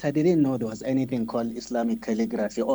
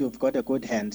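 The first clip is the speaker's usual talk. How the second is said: ordinary delivery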